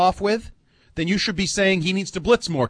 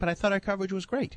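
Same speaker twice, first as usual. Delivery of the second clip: soft, sarcastic tone. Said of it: "I'm being sarcastic".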